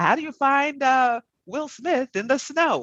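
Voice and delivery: very high, stagey, theatrical delivery. Telling a dad joke to the other speaker, in a stagey voice. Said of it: "I have to do it in like a stagey kind of voice".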